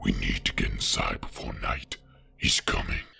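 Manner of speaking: put-on very low, creaky, grim rasp. Reading Bruce's line as he looks up in the sky outside Wayne Manor, do a Batman impression. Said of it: "sounds like the best Batman impression of all time".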